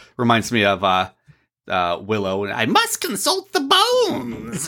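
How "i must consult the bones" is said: very high, slow, drawn-out sing-song voice. Quoting a line from Willow: Billy Barty impression. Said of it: "that's my Billy Barty impression".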